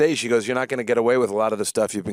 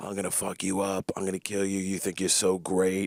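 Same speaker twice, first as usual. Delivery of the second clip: menacing, hushed half-whisper, close and threatening; 3 semitones lower, 7 dB quieter than usual. Recalling the HR lady, the speaker retells a half-whisper in the ear. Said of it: "she was whispering in my ear".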